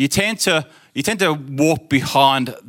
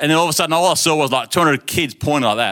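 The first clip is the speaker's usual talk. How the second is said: plain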